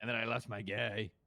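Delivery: leathery, disgruntled voice. A player reports losing their guy while on backup; leathery, disgruntled. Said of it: "like leathery. It was disgruntled".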